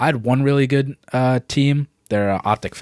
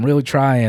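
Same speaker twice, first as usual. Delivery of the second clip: ordinary talk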